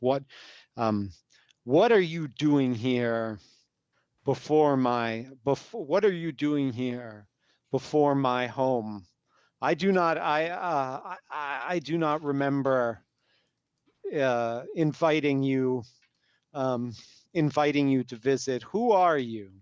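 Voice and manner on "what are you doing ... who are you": grand, regal, stately, queenly female voice. Narrating a voice booming out of a catfish head at the visitors, booming regal voice. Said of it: "it booms out, regal, the voice".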